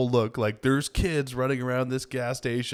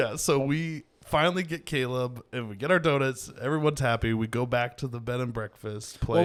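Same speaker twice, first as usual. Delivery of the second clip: ordinary talk, nothing marked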